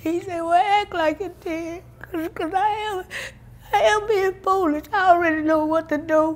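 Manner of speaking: tearful sobbing words in a very high voice. Recounting a conversation with the Lord about being foolish, crying.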